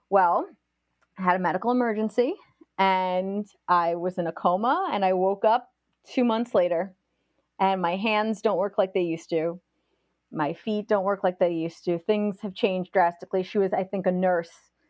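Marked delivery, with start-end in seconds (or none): none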